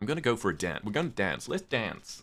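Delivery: dance said with American pronunciation. Showing how american people say the word dance: american accent. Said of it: "that's how American people tend to say it".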